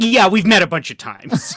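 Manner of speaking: mock very offended tone. Retelling how someone reacted at a block party: imitating someone offended. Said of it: "very offended".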